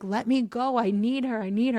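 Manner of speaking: frantic, desperate, pleading cry. Retelling the one being pulled from the water, begging to be let go, imitating his screaming. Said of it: "he's screaming like".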